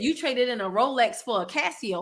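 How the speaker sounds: ordinary delivery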